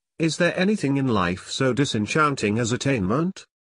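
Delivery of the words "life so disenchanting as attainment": ordinary delivery, nothing marked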